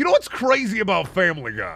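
voice breaking and cracking mid-line. Asking the others a question about a cartoon, voice cracking. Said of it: "I don't know why my voice cracked there".

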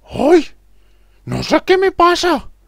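suddenly changed high voice.

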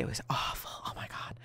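soft, unvoiced whisper.

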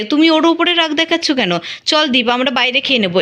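ordinary delivery, nothing marked

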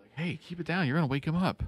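put-on high-pitched voice of a small child. Retelling a book scene where a voice answers an intercom: little kid's voice. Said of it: "little kid's voice basically pops up".

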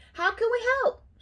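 loud, squeaky, very high-pitched mouse voice. Narrator reads Mouse as the friends rush over to Badger, squeaking. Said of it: "Squeaked Mouse".

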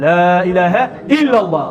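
"illallah" hit hard with strong stress. Teaching the zikir La ilahe illallah, with strong stress on illallah. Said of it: "İllallah'ı vurgulayacaksınız".

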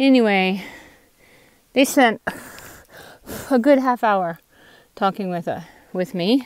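breathless, catching breath. Pausing during a hard climb, out of breath. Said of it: "let me catch my breath".

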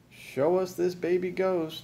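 courteous, polite, high-pitched, unhurried, well-mannered tone. Reading a story: a policeman speaks to a man, polite. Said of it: "said the policeman politely".

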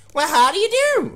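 put-on country girl accent. Picking a voice for the character Regina, Regina in country girl accent. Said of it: "Voice for Regina. Country girl, okay".

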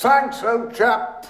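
brisk, very high cry. A man thanks the one who whistled back, crying out briskly. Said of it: "he cried briskly".

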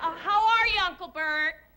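shouting. Greeting Uncle Bert, who hears poorly, a relative is shouting. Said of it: "you don't have to shout".

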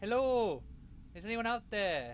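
put-on loud, high Welsh accent. Stream host calling out to viewers, impersonating the Welsh guy from Titanic. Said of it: "That was me impersonating the Welsh guy in Titanic".

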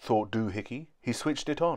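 plain reading voice

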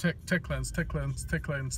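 rapid-fire, tongue-twisting delivery.

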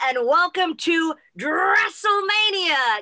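slow ring announcer voice. Welcoming everyone to WrestleMania, done in a Vince McMahon voice. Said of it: "I have to say it in my Vince McMahon voice".

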